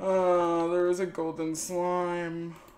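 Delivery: loud, excited call-out.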